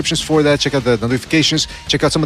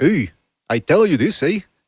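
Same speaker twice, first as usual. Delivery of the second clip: put-on Canadian accent, word eh tagged on. Speaker explaining how people here sound, demonstrating a canadian accent. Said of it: "They sound like Canadians".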